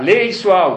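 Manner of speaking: loud, forceful, commanding shout. Retelling a rabbi ordering the reader to read aloud: imitating a rabbi shouting. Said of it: "começa a gritar".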